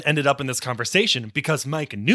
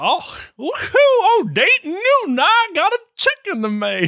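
put-on very high-pitched, old-timey Southern accent; 4 dB louder than usual. Joking about the name Dayton Newton, voicing a character: old Southern voice. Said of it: "an old Southern, like".

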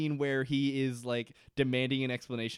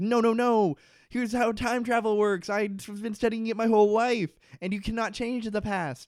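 loud, high-pitched screaming; 9 semitones higher, 6 dB louder than usual. Retelling Daniel screaming at a man banging on the hatch, imitating Daniel screaming. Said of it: "Daniel is screaming at him, like".

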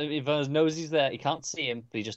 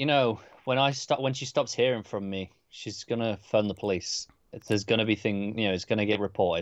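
ordinary talk

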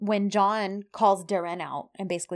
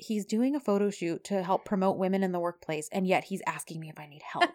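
put-on muttered aside, under breath; 4 dB quieter than usual. Retelling a scene where a woman reacts to a man offering help, acting out muttering under breath. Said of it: "under her breath".

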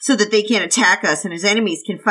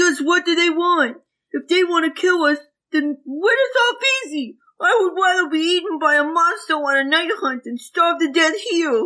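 put-on very high childlike character voice; 9 semitones higher than usual. Reading aloud a hungry kid's complaint from the story: Jing Yi voice. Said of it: "that's the Jing Yi voice you gotta stick with".

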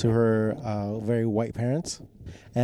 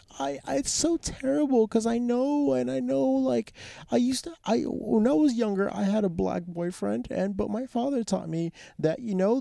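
mock tearful, crying pleading, higher woman's voice; 12 semitones higher than usual. Retelling what a crying woman said after being caught on television: imitating a woman crying. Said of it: "The racist lady starts crying and starts and starts going like".

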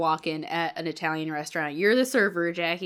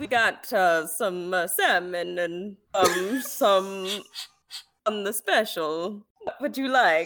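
put-on vampire accent; 2 semitones higher than usual. Playing a server in a comedic scene, starting in Dracula voice. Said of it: "it starts off Dracula and then it will slowly shift".

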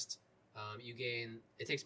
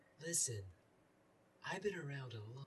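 put-on wise old woman voice; 4 dB quieter than usual. Playing a character announced just beforehand: wise old woman voice. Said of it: "wise old woman voice".

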